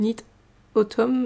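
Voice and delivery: heavy French accent speaking English. Saying a word in English as a French speaker with a poor English accent, in a French accent. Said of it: "mon accent anglais. Vraiment euh, médiocre".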